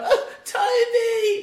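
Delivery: put-on high, loud crying wail of a child, sobbing. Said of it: "this poor kid just starts crying".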